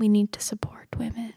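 speaking in a whisper. Speaker interjects during the story about Thelma's death, whispering. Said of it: "Sorry, I was whispering".

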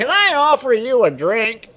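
put-on very loud, very high, swooping old-man bluster. Retelling a scene to friends, doing the old man's voice. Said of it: "Is that how he talks?".

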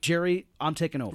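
plain

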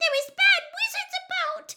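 loud, high-pitched squeak. Winky, struggling to run as if held back, speaks in a squeaky Winky voice. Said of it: "she squeaked distractedly".

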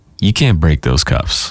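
put-on low, stern, no-nonsense cop voice of authority. Retelling a scene with a famous line, the speaker quotes the cop: mock-stern cop voice. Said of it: "the stern voice of reality".

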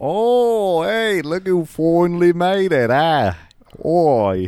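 put-on Australian accent. Greeting arriving players as Australian Eye: Australian character voice. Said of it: "It's me, Australian Eye".

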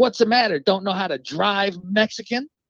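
mock jeering, taunting yell. Retelling how an old lady in a van yelled at his father: imitating someone yelling.

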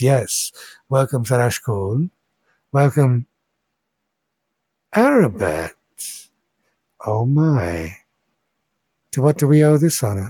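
kindly, friendly, warm welcoming voice. Voicing a blue woman who greets the visitors: friendly voice. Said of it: "with a voice that's friendly".

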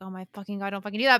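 put-on exasperated outburst. Retelling what he said when she planned to search herself: retelling an exasperated outburst. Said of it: "exasperated outburst in retelling".

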